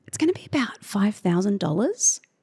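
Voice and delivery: hesitant, sorry-sounding, apologetic rising tone. Showing a bad way to present a price to a customer, apologetic, like a question. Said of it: "you make it sound like an apology ... you frame it like it's a question".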